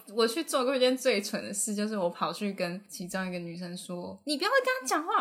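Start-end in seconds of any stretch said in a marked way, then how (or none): 4.2-5.2 all-out, loud, very high bellow. Recalling a foolish moment, confronting a girl who was cleaning, retelling a shout. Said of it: "我就大吼".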